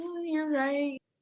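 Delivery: mock weepy, high, tearful voice through crying. Retelling a reply to supportive group therapy members: imitating own tearful reply. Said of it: "I was, like, crying, like".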